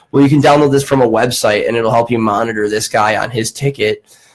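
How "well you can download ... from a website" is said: usual speaking voice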